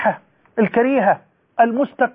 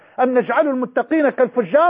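usual speaking voice

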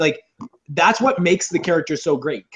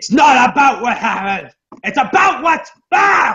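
all-out, high, loud screaming rant; 8 semitones higher, 6 dB louder than usual. Mocking an actor's performance as just screaming, Aaron Eckhart screaming impression. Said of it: "that's just screaming".

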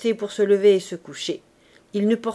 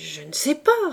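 cowed, intimidated, flustered and thrown off balance. A servant, unsettled by his master's look, answers the old man: intimidated and flustered. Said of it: "répondit Basque intimidé et décontenancé".

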